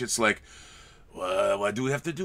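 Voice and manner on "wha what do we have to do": mock French accent, lower and quieter. Mimicking bored European ennui in a movie: put-on French accent. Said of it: "that's my French accent".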